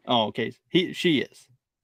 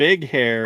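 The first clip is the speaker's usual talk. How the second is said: ordinary talk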